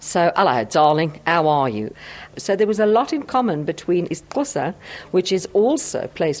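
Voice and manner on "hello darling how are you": low Cockney accent, voiced far back in mouth. Demonstrating that Cockney is placed far back in the mouth, in a Cockney accent. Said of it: "Cockney is placed quite far back in the mouth".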